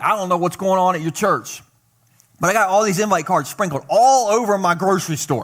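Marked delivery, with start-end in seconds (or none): none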